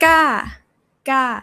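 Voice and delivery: aggressive, forceful falling tone on ga. Teacher demonstrating the tones to the class, aggressive falling tone. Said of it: "Falling, it's pretty aggressive".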